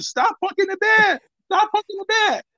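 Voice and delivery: put-on very high, shrill scream, as if from far off. To someone who kept poking the bear, retelling screaming at them from a mile away. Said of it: "I'm screaming at you".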